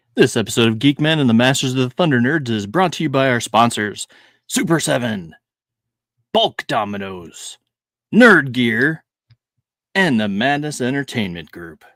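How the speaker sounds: professional voiceover announcer delivery. Reading the sponsor list at the start of the episode: announcer voiceover voice. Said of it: "look at you doing the voiceover work".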